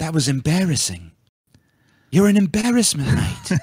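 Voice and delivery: calm, composed, unfussed scolding tone. Imitating the calmer way that Gordon Ramsay insults someone. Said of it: "I like when he's more calm".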